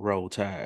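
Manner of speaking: soft, hushed, subtle library-quiet voice. Retelling a stranger's remark in a store: imitating a quiet library voice. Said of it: "the most subtle in his library voice".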